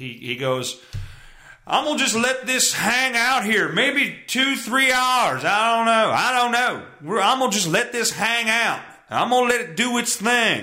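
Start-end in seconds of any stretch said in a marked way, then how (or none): 1.7-10.6 very high-pitched, heavy-set gentleman voice. Retelling how a barbecue host lets the meat rest: Malcolm Reed impression. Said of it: "did my best Malcolm Reed impression".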